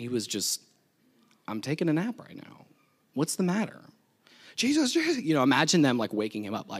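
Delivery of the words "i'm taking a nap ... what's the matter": mock casual, soft, untroubled, unbothered voice. Preaching on Jesus asleep in the boat during the storm, imitating unbothered Jesus. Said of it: "Jesus wasn't bothered".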